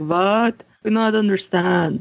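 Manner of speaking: odd, slow, weird put-on Eastern European accent. Acting out how Americans react to the word football, weird Eastern European accent. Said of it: "some sort of weird Eastern European accent when I do them".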